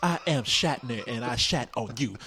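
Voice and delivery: slow, deliberate, measured, word-by-word spaced-out pronouncement. Joining the bit about a poetry girl: William Shatner voice. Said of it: "why is she speaking like William Shatner".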